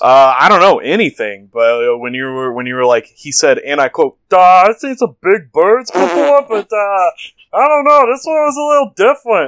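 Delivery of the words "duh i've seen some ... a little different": very high, goofy cartoon character voice. Showing the voice the story's witness could have had: Baby Huey voice. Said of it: "a Baby Huey thing".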